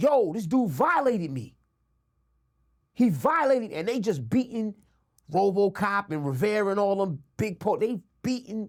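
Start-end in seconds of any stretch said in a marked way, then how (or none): 0.0-1.5 calling out in a mild, held-back yell. Retelling a beating, imitating own past yelling. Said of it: "I'm yelling out".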